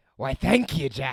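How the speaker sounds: dragged-out pirate-style voice. Trying a promised impression of a pirate captain: Barbossa voice. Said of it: "I'm gonna try and do my, my Barbosa".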